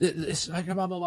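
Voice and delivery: mock screaming. Recounting a man in a food line screaming at you, retelling a man screaming. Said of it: "He's like screaming at me".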